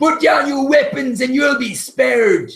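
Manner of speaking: very high, loud shouted yell. A bandit shouts through the rain toward the player's character: shouting a demand. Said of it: "one of them shouts out".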